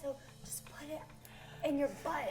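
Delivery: hushed, breathy whispered aside, barely voiced. Whispering to a fellow player so another can't overhear; whispering. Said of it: "I'm whispering so Harold can't hear".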